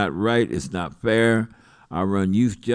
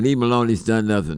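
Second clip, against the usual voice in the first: ordinary delivery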